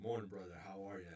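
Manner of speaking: put-on smooth English accent, spoken quickly. Retelling Idris Elba's greeting while working on his movie, in Idris Elba's smooth English accent. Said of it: "in that smooth English accent".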